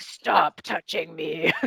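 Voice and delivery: low, rough, hushed hero voice. Explaining what happens when they don't speak up early, in Batman voice. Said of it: "go into Batman voice mode".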